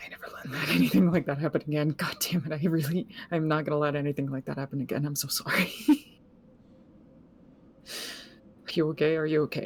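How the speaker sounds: whispering in a character voice. Voicing a character holding someone after danger, whispering in character.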